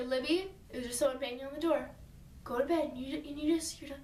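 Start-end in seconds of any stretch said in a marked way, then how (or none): none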